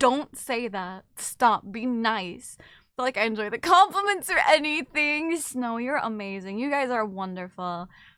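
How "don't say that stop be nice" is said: slow, deliberate motherly mom voice. Asked by chat about their mom voice, showing it: mom voice. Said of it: "My mom voice is just like".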